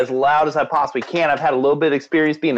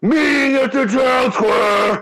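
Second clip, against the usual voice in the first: very high-pitched, loud character yell; 9 semitones higher than usual. Showing what the character yells in the street: yelling in character. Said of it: "what exactly do you yell again?".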